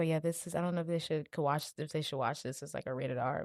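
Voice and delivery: soft, breathy half-whisper aside. Speaker recalls a man half-whispering to their dad, imitating a half-whisper. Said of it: "kind of like whispering to Dad".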